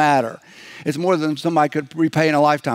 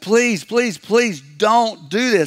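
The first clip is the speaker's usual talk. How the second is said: mock earnest, pitched-up imploring tone; 6 semitones higher than usual. Retelling a parable, acting out the servant imploring his master: imitating a servant begging. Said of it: "He's begging".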